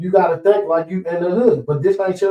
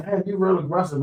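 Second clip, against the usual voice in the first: ordinary delivery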